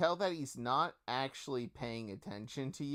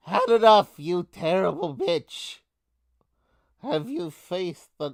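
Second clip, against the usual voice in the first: booming, very loud German-sounding rat voice; 4 semitones higher, 9 dB louder than usual. Narrating a battle as the Rat King yells at his enemy, German-sounding rat voice. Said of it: "what was the voice for the rat? ... almost sounded like a German rat".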